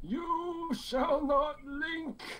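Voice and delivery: put-on high-pitched elderly man voice. Joking with the others about linking, doing a Gandalf old man voice. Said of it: "I like your old man voice".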